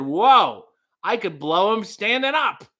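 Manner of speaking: mock overloud, high, rising blurted exclamation. Retelling their own blurted remark about a big man, too loud and high. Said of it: "kind of too loud in my pretty high voice said".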